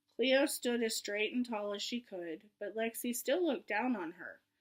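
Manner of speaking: ordinary delivery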